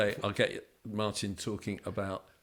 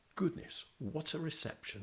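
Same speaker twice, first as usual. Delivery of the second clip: very proper, well-spoken, pitched-up voice; 7 semitones higher, 7 dB quieter than usual. Retelling what a former player said back at the tunnel: very proper voice. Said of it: "in that very proper voice".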